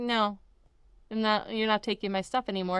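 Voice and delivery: normal talking voice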